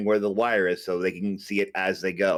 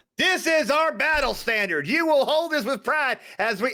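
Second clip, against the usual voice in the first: put-on yell, higher pitched. Retelling how a small girl gave orders during a game of pretend, retelling a yell. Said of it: "and I am yelling this".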